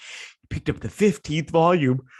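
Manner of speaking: mid-yawn. Recording early in the day, retelling what a man said, yawning. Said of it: "sorry, I'm yawning because it's early".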